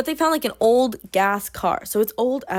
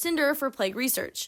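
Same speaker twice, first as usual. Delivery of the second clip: ordinary talk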